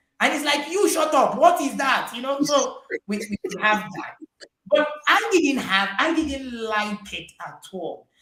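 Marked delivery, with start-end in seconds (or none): 0.7-2.1 too-loud, high-pitched yelling. Retelling a father's reply to being told his voice is too loud: imitating a father yelling. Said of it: "this voice is too loud now".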